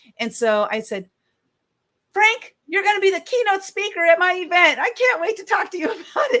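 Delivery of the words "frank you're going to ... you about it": very high, blurted out suddenly all at once. Speaker recounts meeting a cowboy she wanted at her event; retelling a blurted outburst. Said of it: "Like I just like blurted it out".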